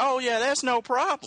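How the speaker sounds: high, breezy, reassuring tone.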